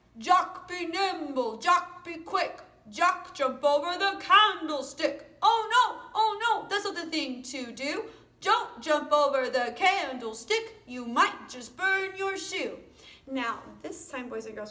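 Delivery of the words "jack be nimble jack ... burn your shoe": very loud, booming roaring lion voice, pitched up. Saying the rhyme for boys and girls, in your lion voice. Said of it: "I am going to use my lion voice to say our rhyme".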